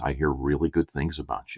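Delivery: low, hushed stage whisper. Retelling what a lady at the barber's half-whispered in the speaker's ear. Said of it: "She whispers in my ear".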